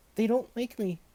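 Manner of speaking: shrill, squeaky little voice, very high pitch. Narrator reading a story, voicing a boy's line as the cats leap away: squeaky voice. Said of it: "squeaked Billy".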